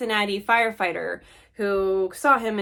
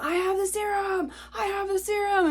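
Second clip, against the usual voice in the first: put-on shrill, very high repeated shout; 12 semitones higher than usual. Retelling a musher calling out on the trail: imitating someone yelling. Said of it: "he's yelling at him".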